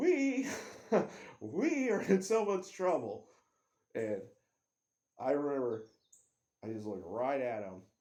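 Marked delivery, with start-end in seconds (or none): 0.0-3.3 mock loud, high, stretched, swooping scream of alarm. Retelling how a friend reacted after the crash: imitating someone screaming. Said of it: "he's screaming".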